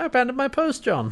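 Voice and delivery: play-acted delighted gush, very high-pitched, overjoyed. Retelling a scene line from a show: imitating someone very happy. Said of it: "he's very happy about it".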